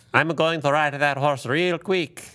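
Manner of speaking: put-on Latin American jockey accent. Imitating jockeys interviewed at the Kentucky Derby: imitating a Latin American jockey accent. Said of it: "So most of them talk like this".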